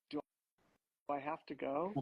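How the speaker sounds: imitated soft quiet female voice. Retelling Rebecca's reply to the hot tub invitation: imitating Rebecca speaking softly and quietly. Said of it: "how softly and quietly Rebecca was like".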